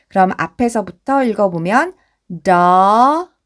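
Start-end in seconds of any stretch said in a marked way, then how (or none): 2.5-3.3 word double stretched out very slowly. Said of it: "double이 되고요".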